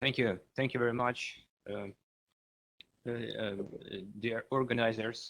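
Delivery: very soft speech, too quiet to hear. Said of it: "could you speak a little louder".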